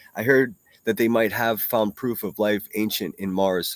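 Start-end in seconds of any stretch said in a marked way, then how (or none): none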